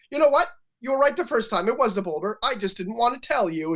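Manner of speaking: put-on sassy tone. Retelling a TV character admitting the truth: imitating a sassy reply. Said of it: "she's all sassy".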